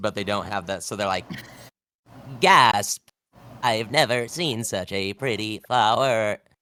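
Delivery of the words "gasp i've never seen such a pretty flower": loud, very slow, stiff, robotic faked awe. Imagining robots trying to do human emotions, as a robot faking emotion. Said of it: "trying to do human emotes".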